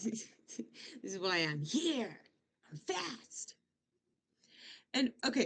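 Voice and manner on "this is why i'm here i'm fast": mock boastful voice, quieter. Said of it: "showing off".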